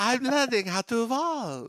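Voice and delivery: fake French accent, very high pitch. Speaker mocking a scene where a character spins around, in a fake French accent. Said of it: "With my French accent".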